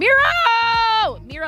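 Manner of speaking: voice cracking way up high, very high, drawn out. Spotting someone's pin on a map during a stream, voice breaking. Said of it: "my voice is breaking".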